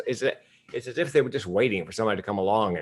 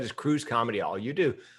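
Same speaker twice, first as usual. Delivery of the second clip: plain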